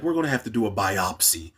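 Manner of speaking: soft, quiet, under-the-breath voice. Retelling a doctor's line from part two, imitating someone speaking quietly. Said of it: "he kinda said it quietly".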